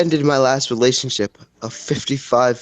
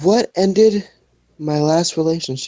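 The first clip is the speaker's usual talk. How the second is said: put-on gloomy, depressed old-man voice, pitched up; 5 semitones higher than usual. Reading out a card during a card game, in a sad old depressed man voice. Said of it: "let me put a sad old depressed man voice on".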